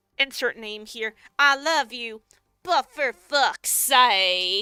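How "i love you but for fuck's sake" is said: loud, slow, laid-on Southern drawl. Quoting a favorite line when something goes wrong: Millie impression, Southern accent. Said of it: "I put on my best, uh, Millie impression".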